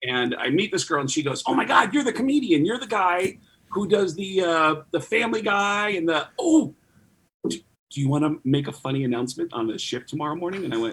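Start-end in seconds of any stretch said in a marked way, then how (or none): 1.5-10.6 bubbly, peppy, upbeat gushing chatter. Retelling what the cruise director said, imitating a peppy cruise director. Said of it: "She's peppy".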